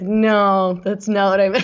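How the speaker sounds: usual speaking voice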